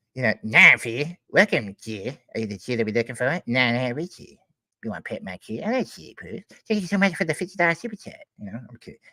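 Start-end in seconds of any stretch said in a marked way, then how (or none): 0.5-8.2 animated cartoon schoolboy voice. Thanking viewers for a super chat, the speaker slips into a Cartman voice. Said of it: "like freaking Cartman and be like".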